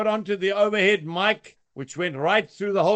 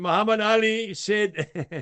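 usual speaking voice

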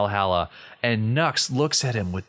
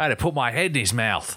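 mock Australian outback guide accent. Joking about a Wizarding World version set in the Australian bush: Steve Irwin impression. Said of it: "Wizarding World Steve Irwin".

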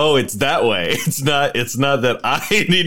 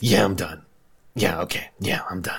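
curt, grudging, low, grumpy muttering; 5 semitones lower, 5 dB quieter than usual. In a tabletop game, a player answers a glaring woman's question, grumpy. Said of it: "[name] is so grumpy. / [name] like narrows his eyes and is just like, / [name] is so grumpy".

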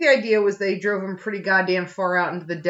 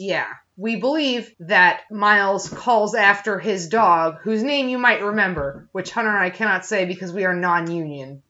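ordinary delivery

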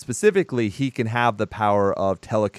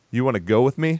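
put-on jittery, unsure, nervous teen boy voice; 3 semitones higher than usual. Retelling a movie scene where a boy asks a girl out: imitating a nervous boy asking. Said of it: "He's so nervous".

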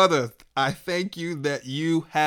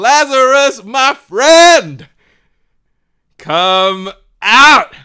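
very loud, very slow, booming, high-pitched voice; 8 semitones higher, 14 dB louder than usual. Retelling the story of lazarus, calling him out in a loud voice. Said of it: "says to Lazarus in a loud voice".

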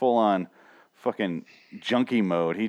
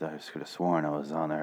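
soft, low, hushed half-whisper; 6 semitones lower, 8 dB quieter than usual. Speaker acts out a man's episode of half-whispers and screams, imitating his half-whisper. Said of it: "my terminology is whispers and screams".

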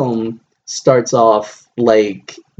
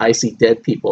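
plain

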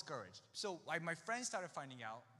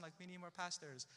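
ordinary talk, nothing marked

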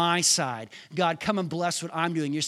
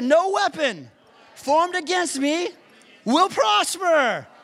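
firm, emphatic delivery with conviction; 12 semitones higher, 6 dB louder than usual. A speaker leading listeners in repeating scripture, saying it like they mean it. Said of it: "Now say it like you mean it".

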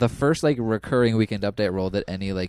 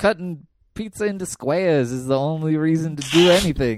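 Chicago accent with pitch raised higher; 6 semitones higher, 3 dB louder than usual. Asked by the other speaker to do an Illinois accent, Chicago accent. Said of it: "let me hear your best Illinois accent, like a Chicago".

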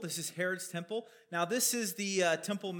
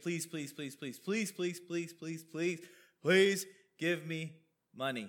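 play-acted desperate, insistent begging, over and over. Retelling how a man asked the apostles for money: imitating someone begging. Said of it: "He is probably begging".

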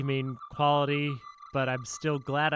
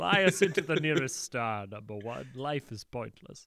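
plain

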